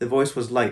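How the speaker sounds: ordinary delivery, nothing marked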